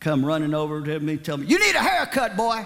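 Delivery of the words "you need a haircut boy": mock preacher voice, loud, high-pitched, scolding yell. Retelling a preacher running over to him at a campground, imitating a preacher yelling. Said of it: "he was yelling at me".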